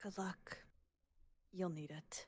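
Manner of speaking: quiet sincere mutter. Voicing a character wishing the group luck: quiet sincere mutter. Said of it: "you hear Nyx mutter a single statement".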